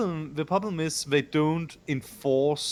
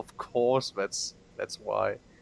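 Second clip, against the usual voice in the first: sarcastic, sincere on the surface, earnest-sounding; 6 semitones lower than usual. Replying to an explanation about the main character: sarcastic mock sincerity. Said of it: "the most sincere, sincere, uh, tone".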